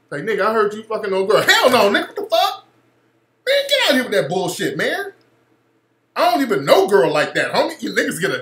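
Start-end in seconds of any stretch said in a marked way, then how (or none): 1.4-7.8 put-on defensive, protesting tone with swooping pitch. Describing how men once reacted to accusations, the speaker acts out: mock-defensive denial. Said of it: "you started getting all defensive".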